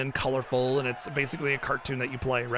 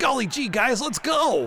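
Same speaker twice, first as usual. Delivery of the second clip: over-the-top, exaggerated cartoon voice, very high; 10 semitones higher, 4 dB louder than usual. Describing the cartoon style of voice acting: exaggerated cartoon voice. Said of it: "the cartoon style, you know, where it's like".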